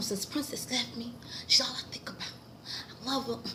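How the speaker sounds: whispered, breathy put-on voice. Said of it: "I'm trying to do it in my [name] voice".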